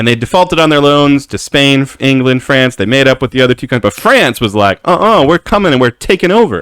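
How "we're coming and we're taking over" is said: higher-pitched mock New York gangster tough talk. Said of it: "Like, like New York gangsters".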